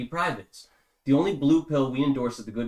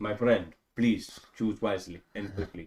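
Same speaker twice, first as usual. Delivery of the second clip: lower put-on genie voice with Indian accent; 5 semitones lower, 4 dB quieter than usual. Playing a genie granting three wishes to a lamp robber: Indian genie voice. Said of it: "this genie is an Indian genie".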